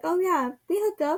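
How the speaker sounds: mock casual, unbothered, offhand, nonchalant tone. Retelling a suspect's answer during police questioning: imitating a nonchalant tone. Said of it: "just so nonchalantly".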